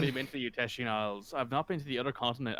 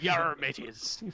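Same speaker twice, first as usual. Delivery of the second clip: put-on pirate accent, higher pitch; 3 semitones higher than usual. Voicing Zedna, suddenly speaking in a very stereotypical pirate accent. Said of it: "speaking in a very stereotypical pirate accent".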